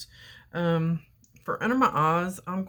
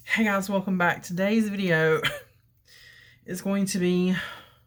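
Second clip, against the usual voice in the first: winded, breathing hard; 2 semitones higher, 3 dB louder than usual. Opening a video to viewers, already out of breath. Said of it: "I'm already out of breath".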